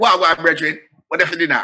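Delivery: put-on Jamaican patois accent. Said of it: "And he's patois".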